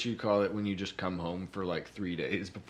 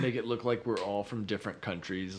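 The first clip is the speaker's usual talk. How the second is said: ordinary talk, nothing marked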